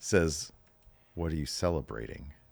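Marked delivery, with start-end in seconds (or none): 1.1-2.3 put-on stern voice, lower and quieter. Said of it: "she's not even yelling".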